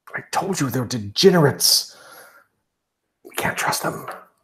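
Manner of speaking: hushed, confidential, flustered, anxious whisper. Voicing a masked figure who leans in to two players: character whispering. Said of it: "leans down and whispers to the two of you".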